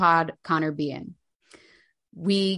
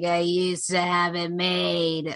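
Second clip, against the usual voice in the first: put-on slow, drunk-sounding voice. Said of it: "being like".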